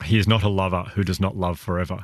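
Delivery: plain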